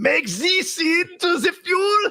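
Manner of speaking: put-on German accent, very high and very slow. Imitating Germans met at an event: imitating a German accent. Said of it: "I wanna do the accent".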